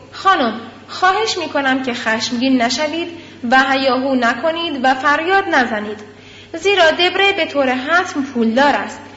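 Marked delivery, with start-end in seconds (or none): none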